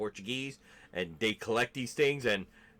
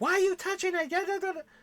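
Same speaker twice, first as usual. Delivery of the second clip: mock very high, shrill, screaming scolding yell; 4 dB louder than usual. Retelling a great-grandmother yelling at the speaker: imitating someone yelling. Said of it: "she gets yelling at".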